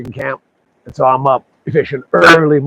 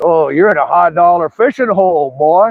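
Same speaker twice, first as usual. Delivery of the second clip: put-on cranky, sour, crabby old man voice; 4 semitones higher than usual. Retelling what an old man said walking up to him, imitating a crabby old man. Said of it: "Just kind of had this crabby attitude".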